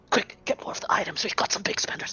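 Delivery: quick, theatrical stage whisper. Voicing an auctioneer urging staff to bring more items: stage whisper. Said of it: "as he was stage whispering that".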